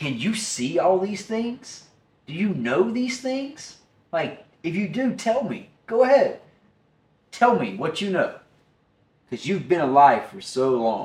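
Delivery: acted, taunting, needling, sarcastic tone. Retelling how he questions Job, as a retold sarcastic challenge. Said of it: "it's so, like, sarcastic".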